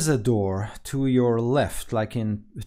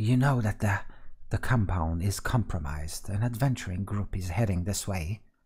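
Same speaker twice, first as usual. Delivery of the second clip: quietly spoken, mild man's voice; 3 semitones lower, 4 dB quieter than usual. Narrating an overheard conversation, voicing the soft-spoken man: soft-spoken voice. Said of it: "you hear the soft spoken".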